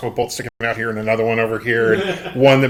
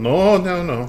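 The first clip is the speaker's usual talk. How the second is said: put-on Russian accent, higher; 7 semitones higher than usual. Answering in character whether something is in the backpack: russian accent. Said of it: "I'm doing the, the Russian accent".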